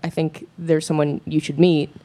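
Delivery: normal talking voice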